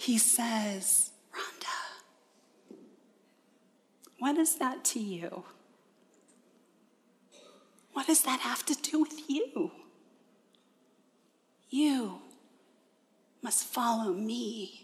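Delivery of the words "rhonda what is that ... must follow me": put-on kind, gentle, compassionate tone, quieter. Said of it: "in the kindest, most gentle, most compassionate way".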